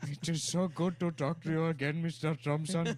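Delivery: very loud, high, put-on Indian accent. Speaker acts out a man reading his pen pal's letter aloud: Indian voice. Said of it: "he does the Indian voice".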